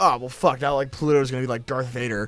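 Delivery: ordinary delivery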